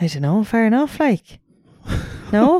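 Kerry accent blended with non-native English. Answering a question mid-conversation as a joke, Kerry accent mixed with non-native English. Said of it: "what was that accent you just did?".

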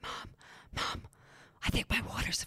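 high, soft whisper.

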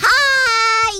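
shouting loudly. Greeting everyone in the studio: shouting into the microphone. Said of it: "not to shout at the microphone".

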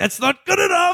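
obvious rage, shrill angry outburst, very high-pitched. Retelling the leader punching a table: imitating an angry outburst. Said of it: "he punches a table and he's like".

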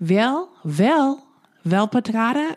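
acted unrehearsed, halting delivery. Mocking a TV character's line reading: imitating Jane's unpracticed line reading. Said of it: "like she just said it for the first time".

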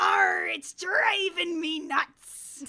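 booming, drawn-out, slow bellowing pirate voice. Mocking an actor's line delivery in a film: Dennis Quaid pirate voice. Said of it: "sounds like Dennis Quaid got ready for this scene by saying".

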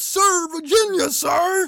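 very high-pitched, loud shouted reply. Asked where they're from, the speaker reenacts a movie scene, retelling a yell. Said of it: "I yell out".

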